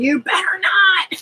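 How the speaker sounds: re-enacted screaming. Retelling screaming at police in the er, retelling a scream. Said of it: "I started screaming".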